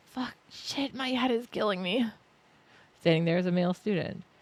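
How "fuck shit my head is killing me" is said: high, pained cursing, spat out. Voicing a student holding his head in pain: cursing in pain. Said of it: "He holds his head in pain while spitting curses".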